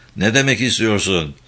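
ordinary delivery

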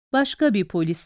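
ordinary delivery

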